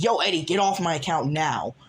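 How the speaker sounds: put-on yelling voice. Acting out Vin's part in an argument with Eddie, yelling as Vin. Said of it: "when I'm yelling, that's Vin".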